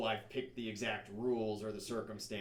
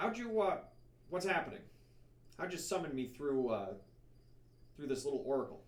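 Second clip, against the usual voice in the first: odd, squeaky man's voice pitched strangely high; 5 semitones higher than usual. Voicing something speaking out of an oracle's mouth, in a strange, squeaky, masculine voice. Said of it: "a strange, squeaky, masculine voice".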